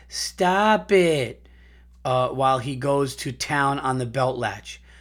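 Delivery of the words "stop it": high, sarcastic smart-ass jab. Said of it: "in the sarcastic, smart-ass voice".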